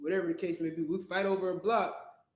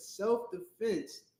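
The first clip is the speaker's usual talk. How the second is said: heavy stress placed on the word self-defense. Making a point to another speaker: stress on self-defense. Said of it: "I gotta stress that word".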